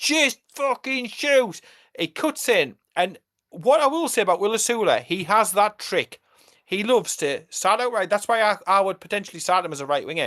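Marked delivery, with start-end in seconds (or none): 0.0-1.6 play-acted, high, screamed delivery. Recalling a match in the stands, the speaker reenacts screaming at a player to shoot. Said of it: "I'm screaming at him".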